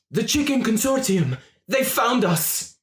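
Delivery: shrill, very high, very loud panicked scream. Voicing a character who bursts in with news of an attack: screaming in panic. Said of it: "she screams".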